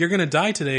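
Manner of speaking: ordinary talk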